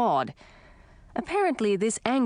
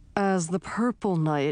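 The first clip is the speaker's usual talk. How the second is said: usual speaking voice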